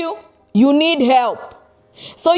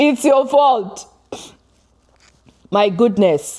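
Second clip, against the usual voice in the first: talking through laughter, lower pitch; 4 semitones lower than usual. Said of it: "I'm laughing".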